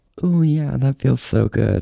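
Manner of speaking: suggestive, sultry, creaky sexy AI voice. Speaker retells a joke bit they performed: impression of a sexy AI. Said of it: "this is my impression of AI if it's wet".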